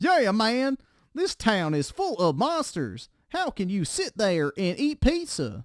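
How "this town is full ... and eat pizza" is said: hammy, comically bad acting, high and swooping. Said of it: "What in the fuck is that voice".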